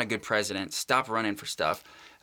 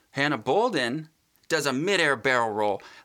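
plain

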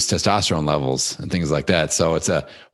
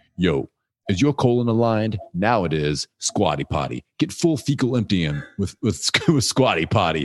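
total put-on New York bro ad voice. Speaker imitates a podcast host reading an ad, New York bro accent. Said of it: "like this total like New York, like bro accent guy".

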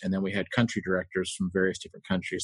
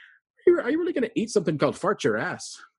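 put-on Irish accent, very high pitch and swooping; 12 semitones higher, 3 dB louder than usual. Retelling what Inda said in line at a food shop, in Inda's Irish voice. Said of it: "in his lovely Irish voice said".

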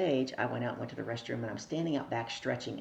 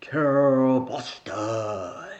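big, booming, loud calling voice; 10 dB louder than usual. Retelling how a man across the room called your name: Barry's booming voice. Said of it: "in his booming voice".

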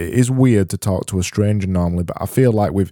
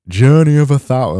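exaggerated, too-broad Yorkshire accent, loud and high; 5 semitones higher, 5 dB louder than usual. Trying a Yorkshire accent again on a saying, overdone Yorkshire accent. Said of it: "that's too far the other way".

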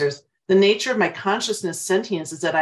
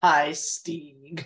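mock sneering AI voice, lower; 2 semitones lower than usual. Describing how movie AIs turn evil, imitating the AI's mock sneering voice. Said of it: "the AI always gets a little bit of sneer in his voice".

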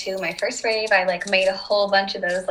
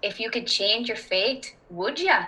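put-on Irish accent; 2 semitones higher than usual. Showing an intro phrase that helps slip into accents: Irish accent. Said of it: "get into your more Irish accent".

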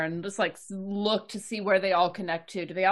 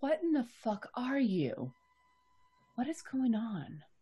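very soft, hushed, barely-there voice; 4 semitones higher, 8 dB quieter than usual. A character hearing another's voice echo through the vent, asking very softly. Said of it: "like very softly".

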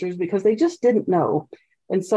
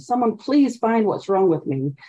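acted begging and pleading tone. Recounting how she asked anyone to find a diagnosis: retelling own begging and pleading. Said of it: "I was begging and pleading for someone".

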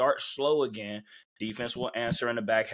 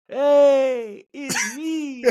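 put-on stadium announcer voice, higher and louder; 9 dB louder than usual. Retelling a former player getting on the stadium mic: imitating Otis on the mic. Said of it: "he got on the mic, he was like".

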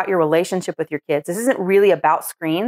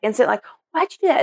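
put-on pitched-up, upset little kid crying out; 5 semitones higher than usual. Retelling how a kid screamed at her mom when the phone fell, retelling a kid's scream. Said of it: "the kid was instant screaming".

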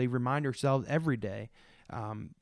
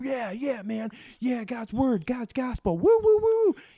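put-on excited preacher voice, higher, louder, slower; 12 semitones higher, 8 dB louder than usual. Speaker imitates how the listener was preaching; imitating excited preaching. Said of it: "preaching with all this excitement".

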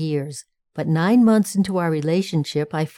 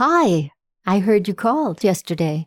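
mock very nonchalant, casual, offhand, couldn't-care-less tone. Telling of calling back a man who had phoned, retelling a nonchalant greeting. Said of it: "in a very nonchalant voice said".

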